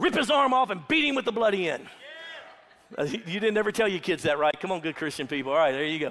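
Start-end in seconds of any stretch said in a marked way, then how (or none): none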